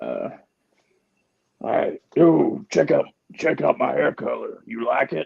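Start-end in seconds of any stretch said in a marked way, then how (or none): 2.1-5.3 rough, creaky, wrestler-style voice. Joking that women using hair dye start talking like Hulk Hogan. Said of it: "they start talking like Hulk Hogan".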